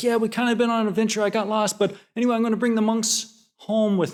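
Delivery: rushed, hurried, high-pitched blurt. Retelling a driver phoning his unhappy wife: imitating someone rushing the words out. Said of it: "he seemed like he was trying to get it out fast".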